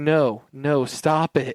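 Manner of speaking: very slow, flat, deadpan monotone. Imitating a weak performance in a film: monotone imitation of Gabriella. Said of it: "in a monotone way".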